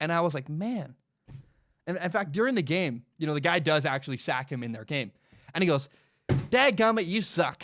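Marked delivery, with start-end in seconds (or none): 6.3-7.6 put-on mild annoyance, higher, louder and slower. Retelling what a player said after being sacked in a game, with mock mild annoyance. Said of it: "mad at a mosquito for landing on you".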